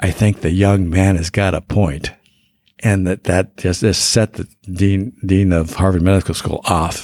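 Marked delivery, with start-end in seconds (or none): 0.0-2.1 put-on stage whisper. Retelling a remark that set off the medical school dean, in a stage whisper. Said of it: "Said in kind of a stage whisper".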